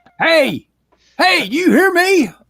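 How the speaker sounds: mock very high shout. Speaker re-enacts calling out to the other speaker who couldn't hear, retelling a yell. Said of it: "I'm yelling at you a couple of times".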